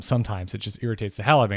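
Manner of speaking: ordinary talk, nothing marked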